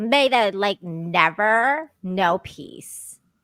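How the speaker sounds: put-on drawn-out, full valley girl voice. Telling the others the impression needs more Valley Girl: Valley Girl Rachel Zegler impression. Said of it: "little bit more Valley Girl at least".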